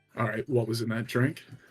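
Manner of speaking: hushed half-whisper, full of menace and threat. A game master voicing a massive figure confronting the player, in a menacing half-whisper. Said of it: "he just sort of menacingly whispers at you".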